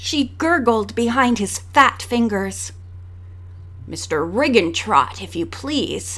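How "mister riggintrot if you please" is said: low, sneering, superior tone. Reading the intruder correcting Nancy after grabbing her, sneering. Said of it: "he corrected her with a sneer".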